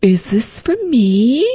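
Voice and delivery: sugary-sweet, high, slow delivery. Retelling seeing a gift and their favorite dinner being made, the speaker asks him, retelling in a sweet voice. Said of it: "a sweet voice".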